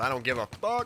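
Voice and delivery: normal talking voice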